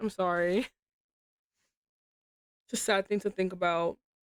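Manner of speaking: emotional, tearing up, close to tears. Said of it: "I'm being emotional".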